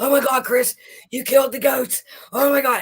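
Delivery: high, loud, panicked outburst, cry of alarm. Retelling an ex-husband's reaction to goats falling over: imitating someone panicking. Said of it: "And he's, like, panicking".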